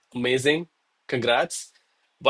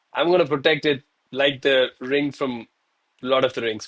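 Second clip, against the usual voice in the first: normal talking voice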